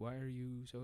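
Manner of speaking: imitated, mock crying. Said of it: "crying on C N B C".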